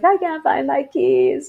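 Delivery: play-acted crying, high, loud tearful wail. Retelling a phone call to a sister; retelling own crying. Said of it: "and I'm crying".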